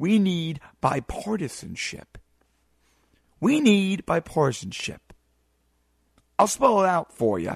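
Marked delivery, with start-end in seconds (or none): 0.0-5.0 very slow, sure, deliberate, words spelled out. A speaker tells listeners to take notes, then says it very slowly and surely. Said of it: "I'm going to say this very slowly and very surely".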